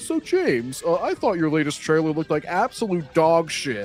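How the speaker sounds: mocking put-on commentator voice. Imitating a commentator interviewing a director in his studio: mock imitation of a commentator. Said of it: "And then he's gonna, like, have James Gunn in his studio".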